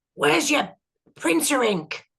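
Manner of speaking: rough, blunt shouting. Telling how a man shouted at the speaker's eldest daughter, retelling a gruff shout. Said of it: "big gruff guy went up to her and just shouted".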